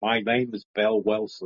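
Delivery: put-on ghostly English accent. Recalling the English ghost from the Conjuring, put-on English ghost accent. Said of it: "Great accent".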